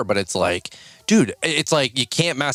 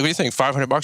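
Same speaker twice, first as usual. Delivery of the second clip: ordinary delivery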